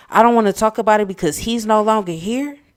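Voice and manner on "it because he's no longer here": ordinary talk, nothing marked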